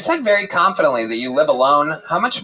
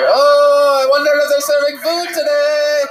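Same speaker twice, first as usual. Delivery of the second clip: loud, very high, put-on breezy casual calm; 11 semitones higher, 5 dB louder than usual. Imitating someone on a plane trying to play it cool. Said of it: "They're just trying to play it cool".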